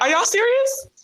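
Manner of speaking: high, incredulous, disbelieving squeal. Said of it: "I was like".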